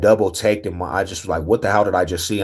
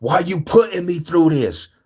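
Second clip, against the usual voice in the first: put-on, very high yell; 10 semitones higher than usual. The speaker recalls yelling at the moon in the foothills; retelling yelling at god. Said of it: "I'm literally yelling at God".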